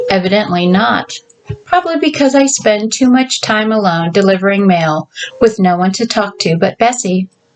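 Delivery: ordinary delivery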